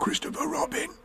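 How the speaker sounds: loud stage whisper. Reading a story, the character calls down to Christopher Robin: loud whisper. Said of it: "He said in a loud whisper".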